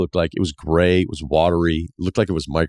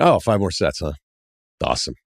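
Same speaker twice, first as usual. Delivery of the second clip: let-down, disappointed retorting tone. Retelling a reply to a man at the gym: imitating a disappointed retort. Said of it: "it was a disappointed retort".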